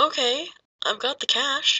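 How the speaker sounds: a bit worried. Maya speaks over the phone line, somewhat worried. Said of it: "in a somewhat worried voice".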